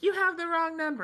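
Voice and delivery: put-on, very high-pitched scream. Retelling answering a caller during the stream: imitating someone screaming. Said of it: "I'm screaming at them".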